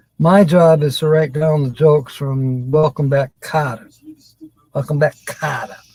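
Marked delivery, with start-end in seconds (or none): 4.7-5.8 soft Brooklyn accent. Repeating a show's title, in a brooklyn accent. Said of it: "what was that, Brooklyn accent?".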